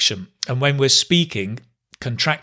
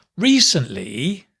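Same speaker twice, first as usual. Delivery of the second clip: fall-rise tone on recently, dipping down then up; 3 semitones higher than usual. Showing intonation on a single word, fall-rise on recently. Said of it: "hear that falling, rising".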